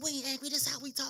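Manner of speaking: put-on very high, loud northern yell. Recalling a family gathering where her husband asked why everyone was angry, retelling her own yelling. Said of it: "And I'm yelling at him".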